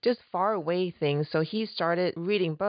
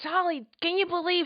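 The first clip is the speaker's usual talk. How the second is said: mock angry outburst, higher; 12 semitones higher than usual. Retelling how her husband reacted while reading a book: imitating an angry husband. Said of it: "he would get so angry".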